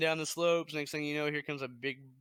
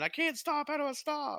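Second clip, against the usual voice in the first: put-on scream, much higher, slower; 13 semitones higher than usual. Imagining themselves coming down the hill out of control, acting out screaming. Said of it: "who's screaming".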